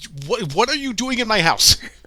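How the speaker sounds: put-on very high voice, super blunt. Retelling a character questioning guests, imitating a blunt reaction. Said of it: "Just being super blunt".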